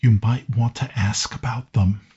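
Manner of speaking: whispered character voice. Voicing Miles walking up behind a player, whispering in their ear. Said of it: "Miles walks up behind you and whispers".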